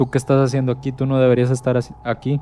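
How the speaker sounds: ordinary talk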